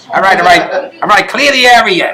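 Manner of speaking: put-on Jersey police-style accent. Recreating a cop role a guest once played, jersey cop accent. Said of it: "Jersey cop accent".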